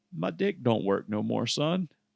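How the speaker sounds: put-on country accent. Retelling what a man told him at Wendy's, in a country accent. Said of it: "Like in like a country accent".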